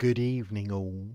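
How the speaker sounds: put-on eerie, sinister, creepy voice. Signing off to the audience with a quoted farewell, in a mock creepy voice. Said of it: "I had to say that so creepy".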